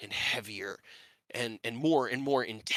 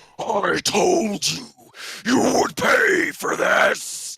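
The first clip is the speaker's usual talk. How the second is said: very loud, very slow, drawn-out bellowing; 8 semitones higher, 9 dB louder than usual. Narrator voicing a five-headed creature above the house, bellowing down. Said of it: "he bellows down".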